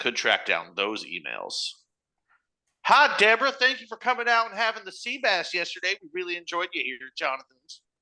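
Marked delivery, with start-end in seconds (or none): 2.8-7.8 put-on very high, sassy Southern accent voice. Speaker acting out a thank-you email to a guest, in a sassy southern voice. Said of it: "It was like sassy Southern".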